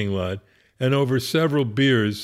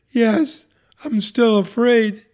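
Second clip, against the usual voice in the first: put-on breathless, very high-pitched voice; 10 semitones higher, 4 dB louder than usual. Retelling a woman in a hospital bed answering a question, imitating breathless speech. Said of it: "breathlessly say".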